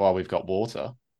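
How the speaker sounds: low, dry, expressionless, unimpressed deadpan. Imagining answering an odd request from a law firm job candidate, acting out a deadpan answer. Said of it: "my entire response would be deadpan".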